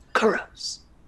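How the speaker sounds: whispering voice calling out. Voicing an elder's voice calling a name: whispering elder's voice. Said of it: "It's a whisper".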